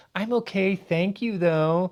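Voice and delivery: high, condescending, passive-aggressive fake-nice tone. Describing someone's passive-aggressive nice facade, mimicking a condescending voice. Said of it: "In this condescending voice".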